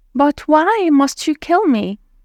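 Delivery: high, shaking, trembling, begging voice. Reading a story aloud, voicing a fisherman facing death: pleading, trembling voice. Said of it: "pleaded, his voice trembling".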